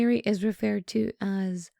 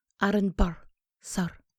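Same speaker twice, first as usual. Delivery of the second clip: put-on, heavily affected Scottish accent; 3 semitones lower, 3 dB quieter than usual. Repeating the line to hear how it sounds, in a Scottish accent. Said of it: "I think it sounds better in a Scottish accent".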